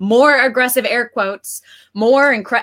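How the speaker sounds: plain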